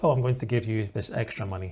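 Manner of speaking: ordinary talk, nothing marked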